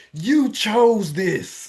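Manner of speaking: drill instructor voice. Acting out an imagined drill instructor answering a crying person: put-on drill instructor voice. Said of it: "coach or drill instructor character is standing over you saying".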